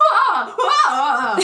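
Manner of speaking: acted loud startled yelp with ah stretched long. Retelling a woman whose skirt gets torn: imitating her startled cry. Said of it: "Is that a good impression?".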